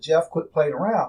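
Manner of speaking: ordinary talk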